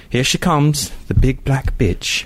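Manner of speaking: put-on upper-class British accent. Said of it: "I usually say it in a, like, a British accent".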